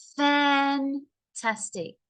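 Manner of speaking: extra force on fan- of fantastic. Pronunciation lesson about sounding happy: voice pushed at start of fantastic. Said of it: "I pushed my voice in the beginning".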